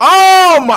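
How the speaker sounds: shouting. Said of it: "I'm yelling".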